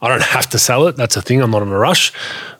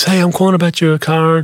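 sweet-talking, nice, high female voice; 8 semitones higher than usual. Describing dealers phoning about a car ad, imitating a nice female caller. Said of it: "that nice female voice".

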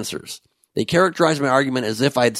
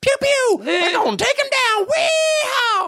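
very high, whooping voice. Joking that a politician resembles a cartoon character: put-on Yosemite Sam voice. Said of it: "that voice I just did".

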